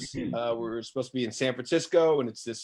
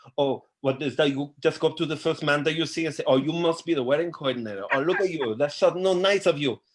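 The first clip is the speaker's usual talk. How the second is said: put-on effeminate Spanish-accented character voice; 3 semitones higher than usual. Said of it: "I do it as that character".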